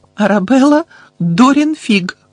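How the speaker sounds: quavering, trembling, very high-pitched voice. A nervous woman perched on the edge of her seat answers a man: trembling voice. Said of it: "відповіла вона тремтячим голосом".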